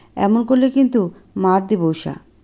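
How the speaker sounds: ordinary delivery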